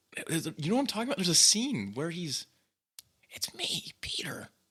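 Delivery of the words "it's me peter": quiet, raspy, higher put-on voice. Imitating a movie line, talking really quiet like Tobey Maguire. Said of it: "he kinda talks like that".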